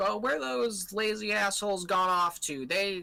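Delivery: hollering, shouting, pitched high. Narrating a night scene on a ship's deck, voicing someone shouting. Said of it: "you hear some like shouting".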